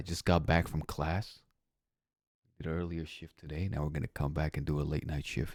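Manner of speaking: hushed whisper. Playing late at night so the upstairs neighbor won't be bothered, whispering. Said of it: "so I'm whispering here while playing".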